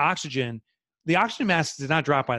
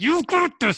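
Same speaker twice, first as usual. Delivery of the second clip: very high voice through clenched, gritted teeth; 12 semitones higher than usual. Acting out a supportive inner voice: talking through gritted teeth. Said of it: "I start gritting my teeth".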